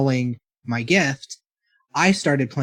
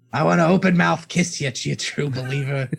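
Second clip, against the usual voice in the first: mock elderly man voice. Joking that you never get out of it once you start, speak in a Stan Lee voice. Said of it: "We were doing a Stan Lee voice".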